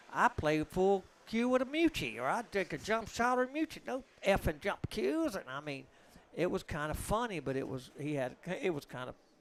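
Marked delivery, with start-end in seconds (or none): 0.1-5.3 high-pitched, mocking, sneering voice. Retelling how a comedian mocked a player: mocking imitation of Earl's voice. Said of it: "Rogan started mocking him and saying".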